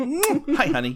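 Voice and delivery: strange put-on high voice. Retelling how an actress greeted her boyfriend after kisses: imitating her weird affectation. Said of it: "a weird affectation in that movie".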